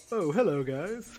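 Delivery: very prim and proper, high-pitched voice. Voicing the mastodon greeting the group at breakfast, in a very proper voice. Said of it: "the most properest voice you've ever heard".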